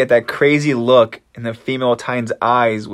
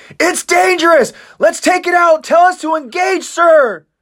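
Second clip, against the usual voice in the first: very high-pitched, screaming voice; 4 dB louder than usual. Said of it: "Odo also screams out".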